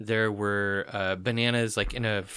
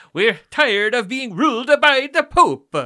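shrill, booming, loud, high-pitched put-on Italian accent; 14 semitones higher, 11 dB louder than usual. Reacting to a co-host's history story, repeating the line in an italian accent. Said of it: "I really was hoping you'd do that on Italian accent".

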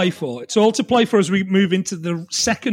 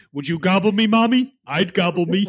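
creepy serial-killer voice. The speaker keeps a bit going for the others, in a Buffalo Bill voice. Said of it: "That was Buffalo Bill from Silence of the Lambs".

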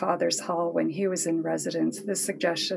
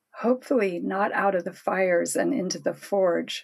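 plain

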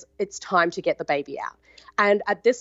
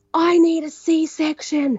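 put-on scream, higher and louder; 9 semitones higher, 5 dB louder than usual. Retelling a hard labour, screaming at the midwife: imitating own screaming. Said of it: "screaming at her".

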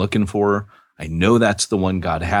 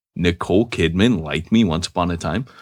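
normal talking voice

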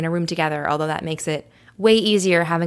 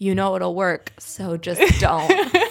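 put-on wicked, evil inner voice. Describing the rebel voice in their head about signing up for classes, mock-evil voice. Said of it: "It's like this evil voice in my head".

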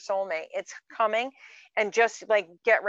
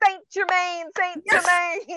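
high-pitched, mocking tone; 9 semitones higher, 4 dB louder than usual. Retelling a video that made fun of New Agers: imitating a mocking YouTuber. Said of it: "the guy was making fun of New Agers and he's going".

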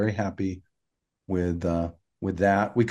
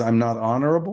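usual speaking voice

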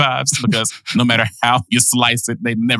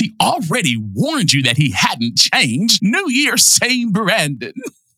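mock overacted, over-enunciated, higher, slower; 7 semitones higher than usual. Speaker mimics how Katie delivers a line, overselling it; imitating Katie's over-enunciation. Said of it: "you over-enunciate the words".

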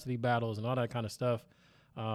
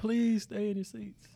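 put-on announcer voice, pleading, higher; 9 semitones higher than usual. Retelling the announcer addressing everybody in the stands: imitating an announcer pleading. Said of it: "pleading with everybody".

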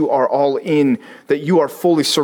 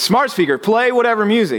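acted-out raised voice, higher and insistent; 8 semitones higher than usual. Speaker retells a man repeating a command to an unresponsive smart speaker, retelling a raised voice. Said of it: "He raises his voice like that's what it needs".

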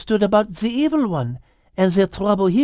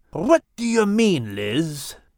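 stern, growling delivery; 2 semitones lower than usual. Reading a story, a defensive animal replies to another creature with a stern growl. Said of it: "He growled sternly".

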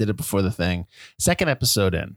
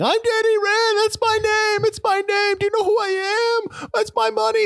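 put-on very high-pitched hollering yell. Retelling a scene where a character is dragged out yelling: imitating a yell. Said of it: "he's being dragged out of his building yelling".

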